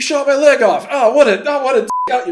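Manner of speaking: very high, loud cartoon-character whine. Describing a character whose leg was shot off, in a Rick and Morty-style voice. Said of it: "he sounds like he's doing like Rick and Morty lines".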